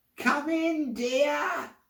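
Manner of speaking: put-on very high, croaky, disguised old woman voice. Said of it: "your voice is so croaky".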